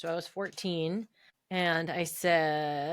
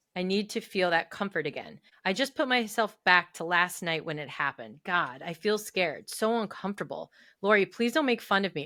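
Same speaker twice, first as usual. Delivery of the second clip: usual speaking voice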